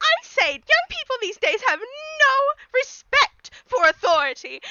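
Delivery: very high, haughty, snooty lady voice. Voicing a lady in a game scene answering a polite question, snooty nose-in-the-air voice. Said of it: "sticks her nose up and goes".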